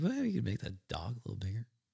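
very quiet, soft voice. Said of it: "in his very quiet [name] voice".

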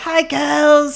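very high, smoke-worn rasping voice. Quoting a woman greeting the girls in a show's first episode, imitating her smoker's raspy voice. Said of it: "she's got a very like smoker's raspy voice".

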